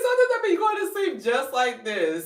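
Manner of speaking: high, loud, excited voice. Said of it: "I was like".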